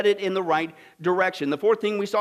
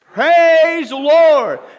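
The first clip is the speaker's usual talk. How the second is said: very loud, high-pitched calling shout; 6 semitones higher, 12 dB louder than usual. Retelling the lady's porch prayer in hard times: imitating a shout. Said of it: "what she shout?".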